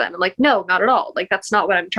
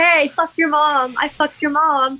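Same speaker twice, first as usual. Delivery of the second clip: acted crude taunting holler, high and drawn out; 7 semitones higher than usual. Retelling yelling in a quiet echoing building while waiting in line: retelling a yell. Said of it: "yelling into this echoey ass building".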